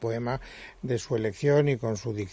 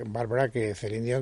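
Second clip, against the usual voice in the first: plain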